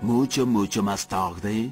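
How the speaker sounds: very low, slow, dragged-out narrator voice.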